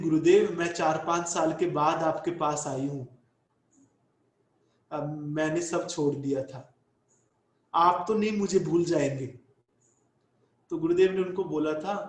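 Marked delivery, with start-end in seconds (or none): none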